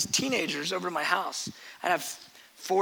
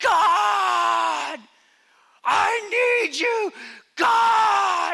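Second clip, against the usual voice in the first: top-of-lungs scream, very high, slow and drawn out; 14 semitones higher, 8 dB louder than usual. Retelling a youth-group girl at the window crying out to God: retelling a scream at top of lungs. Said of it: "She's screaming at the top of her lungs".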